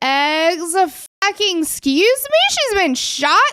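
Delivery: very slow, drawn-out, stunned, incredulous double-take. Retelling how a dispatcher reacted on a call, imitating shocked disbelief. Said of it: "you can hear in her voice".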